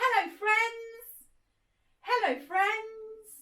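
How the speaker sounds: very high, beaming, bright, cheery, smiley voice. Leading a group warm-up, waving big to everybody, in a happy smiley voice. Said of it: "with our happy smiley voices".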